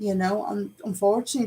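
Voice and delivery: ordinary talk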